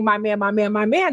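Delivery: ordinary delivery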